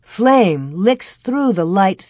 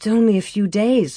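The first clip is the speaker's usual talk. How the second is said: plain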